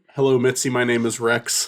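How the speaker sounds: put-on dog voice. Greeting the guest Mitzi: voicing the dog Rex. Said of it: "Rex is now the third co-host".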